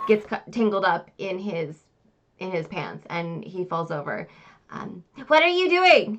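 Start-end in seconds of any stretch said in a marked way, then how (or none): 5.3-6.2 very high, very loud, startled squeal. A startled man caught with his pants down asks a question, higher-pitched voice. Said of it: "Says a, a higher a higher pitched voice coming out of this man's body".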